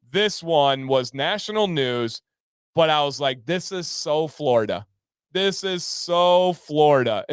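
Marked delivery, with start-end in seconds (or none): none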